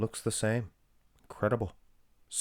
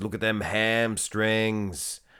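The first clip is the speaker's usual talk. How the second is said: badly done fake Australian accent. Commenting on a bodybuilding match, terrible australian accent. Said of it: "That was a terrible Australian accent".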